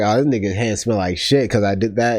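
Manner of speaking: ordinary talk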